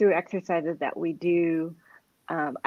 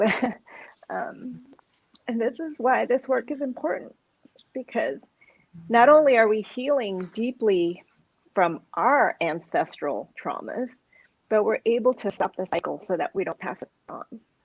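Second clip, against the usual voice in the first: choked up, halting, breaking inside phrases, pitched up; 5 semitones higher than usual. A speaker in a conversation admits they are getting emotional, getting emotional. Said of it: "I'm getting emotional".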